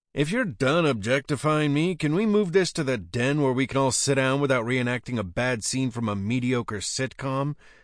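ordinary delivery, nothing marked

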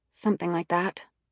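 plain reading voice

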